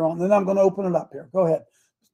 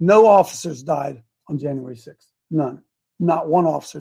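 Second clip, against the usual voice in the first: very slow, low, deliberate, drawn out word by word; 5 semitones lower than usual. Addressing an audience so they all understand, speaking real slow. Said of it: "Let me say this real slow".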